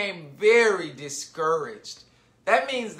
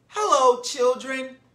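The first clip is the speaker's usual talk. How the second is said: sugary, sweetly spoken, high-pitched; 6 semitones higher than usual. Reading a story aloud: someone greets the children, in a sweet voice. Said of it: "someone said in a sweet voice".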